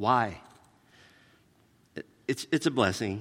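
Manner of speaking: crying while talking. Telling how both parents came to Christ: crying while talking. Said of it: "I'll stop crying".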